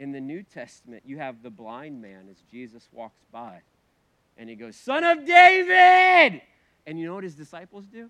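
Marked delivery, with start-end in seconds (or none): 4.8-6.4 very loud, high cry, word drawn out. Retelling the blind man calling out as Jesus walks by, imitating a yell. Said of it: "he yells all the louder".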